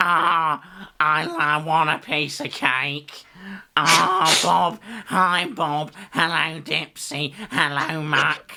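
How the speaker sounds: high, very slow, drawn-out cartoon voice. Showing an old impression of the scarecrow Spud from Bob the Builder. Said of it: "I used to love doing an impression of".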